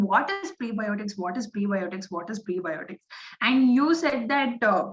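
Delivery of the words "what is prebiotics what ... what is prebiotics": normal talking voice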